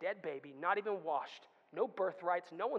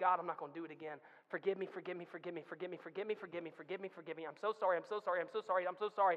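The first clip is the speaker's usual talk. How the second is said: acted-out mock pleading, begging tone. A speaker acts out kneeling before God and asking forgiveness: acting out a pleading prayer. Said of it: "have we got on our knees and said".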